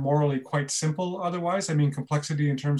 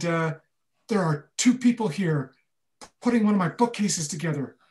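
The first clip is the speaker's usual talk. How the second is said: hushed, whispered speech; 3 semitones higher than usual. Retelling what a caller whispered on the phone, retelling a whisper. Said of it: "there's this whispered voice".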